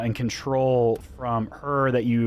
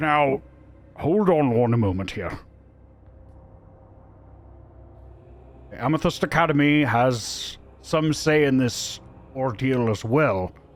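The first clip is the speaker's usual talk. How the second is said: booming, loud, resonant voice. Voicing a character speaking up for the Academy: booming voice. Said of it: "speak up with a bit of a booming voice".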